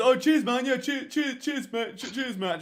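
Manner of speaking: jokey, mocking repetition. Retelling how friends repeat his words to tease him: imitating friends mocking him. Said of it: "just to take the piss".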